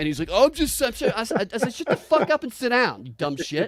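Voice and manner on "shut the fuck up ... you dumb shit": acted, mad, angry delivery. Retelling telling off a man at a Trump rally, retelling an angry outburst. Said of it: "The reason I was mad".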